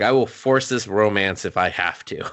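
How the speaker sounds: plain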